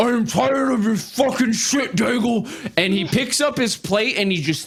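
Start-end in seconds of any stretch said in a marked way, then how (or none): 0.0-2.5 high voice, words garbled by a full mouth. Game master voicing Tyvor turning to a player, talking with mouth full. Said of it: "he's got his mouth full of food".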